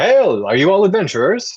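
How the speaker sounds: very high, very loud, rising calling yell. Game master voicing a caravan rider waving the party down, yelling. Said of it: "and yell".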